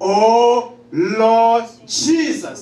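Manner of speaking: loud, full-voiced calling out with a long drawn-out oh. Showing listeners how to call upon the name with an audible voice: calling out loudly.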